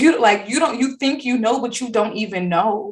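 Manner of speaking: tearful laugh-cry outburst, laughing through tears. Retelling a film scene where Chiron laughs and cries: imitating Chiron crying while laughing. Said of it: "he was crying, laughing".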